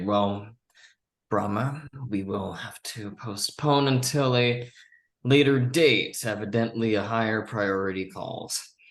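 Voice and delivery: somewhat sarcastic, dry tone. Speaking in character, postponing a meeting for an urgent call: somewhat sarcastic. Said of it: "I say that somewhat sarcastically".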